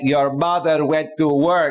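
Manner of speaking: slow, snarky, funny dad voice. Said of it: "he was being all snarky and funny".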